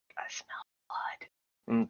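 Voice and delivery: barely-there, light, very quiet whisper. A character gives the shush gesture to two companions, light whisper. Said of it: "I just lightly whisper to them".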